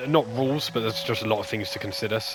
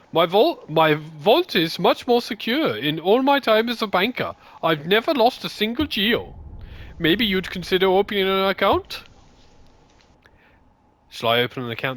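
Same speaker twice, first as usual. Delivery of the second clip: put-on German accent, higher pitched and louder; 10 semitones higher, 5 dB louder than usual. Voicing a game banker character, reading her lines: german accent. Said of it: "your best accent so far".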